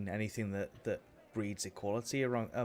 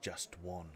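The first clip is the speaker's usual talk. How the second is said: hushed half-whisper, barely audible; 5 semitones lower, 10 dB quieter than usual. Playing a character at a bakery who half-whispers to another character: half-whispering. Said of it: "Val just whispers to her and just goes".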